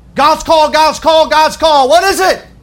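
anxious, fretful, high and loud.

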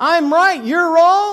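high, loud, stubborn know-it-all insistence.

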